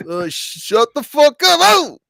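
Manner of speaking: screeching at full blast, very loud. Retelling a comedy bit: Gilbert Gottfried doing Andrew Dice Clay. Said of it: "And then he goes".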